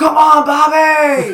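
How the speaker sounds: very high, very loud, shrill yell with stretched word. Retelling how a fan next to them yelled at the players: imitating someone yelling. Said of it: "yelling at the players".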